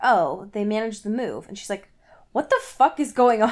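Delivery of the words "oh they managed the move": put-on bone-dry, unbothered deadpan delivery. Retelling a story, quoting what he suddenly said: retelling a deadpan remark. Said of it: "completely deadpan".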